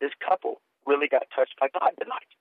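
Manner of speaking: quiet, hushed stage whisper. Retelling what the pastor's wife said at a book signing: imitating a whisper. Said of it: "The pastor's wife whispers to me".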